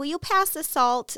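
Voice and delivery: put-on really high small child's voice. Retelling a childhood dinner, quoting own request at the table: imitating own childhood high voice. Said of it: "I had like a really high voice".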